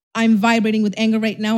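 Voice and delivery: plain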